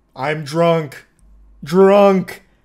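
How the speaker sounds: loud caveman voice speaking in single words. Recounting Wayne's answer about how much he drank, imitating Wayne like a caveman. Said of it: "Speaking like a caveman with like one word".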